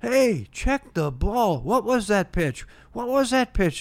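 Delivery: high-pitched yell. Retelling a baseball story, imitating the opposing dugout: imitating the dugout yelling. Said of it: "You're yelling".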